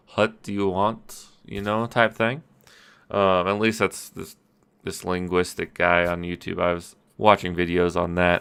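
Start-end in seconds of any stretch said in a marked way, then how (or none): 0.2-1.3 slow Greek accent, wh and h throaty. Showing how English sounds with a Greek accent: Greek accent, sound in back of throat. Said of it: "it's in the back of your throat".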